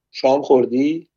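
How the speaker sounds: ordinary delivery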